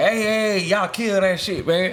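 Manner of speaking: mock urgent hollering, loud street-style yell. Retelling how people yelled to stop a shootout: imitating people yelling. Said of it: "start yelling like".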